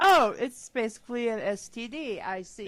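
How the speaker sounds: usual speaking voice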